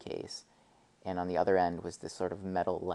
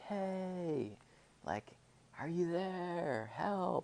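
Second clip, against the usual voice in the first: very high, very slow, drawn-out distant yell; 11 semitones higher, 5 dB quieter than usual. Retelling a person heard yelling up ahead on the trail: imitating someone yelling. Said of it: "yelling, like".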